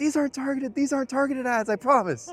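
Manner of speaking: shrieked, very high and very loud scream. Retelling a streamer's reaction to a pop-up ad: imitating someone screaming. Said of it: "he's like screaming".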